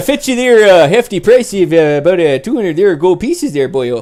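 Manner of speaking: put-on Canadian accent. Continuing to quote what he said, in a Canadian accent. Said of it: "Forgot that it's Canadian".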